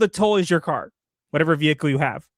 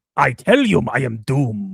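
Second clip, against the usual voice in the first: voice dropped low, bad European accent; 5 semitones lower than usual. Speaker plays Doom, in a terrible European accent as Doom. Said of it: "terrible, terrible European accent".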